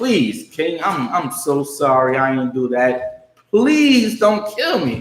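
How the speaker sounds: desperate begging plea with pitch climbing. Retelling the story, the speaker voices Haman before the king, acting out Haman begging. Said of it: "Haman is simply begging so he won't die".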